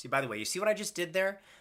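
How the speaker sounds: usual speaking voice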